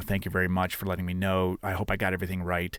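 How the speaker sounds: normal talking voice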